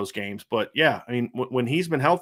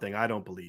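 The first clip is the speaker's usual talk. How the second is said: heavy sarcasm, lower and quieter; 5 semitones lower, 9 dB quieter than usual. Answering a claim that a coach misled a quarterback: incredibly sarcastic. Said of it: "I'm being incredibly sarcastic right now".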